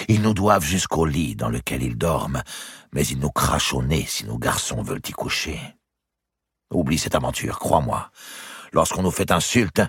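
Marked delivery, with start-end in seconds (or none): none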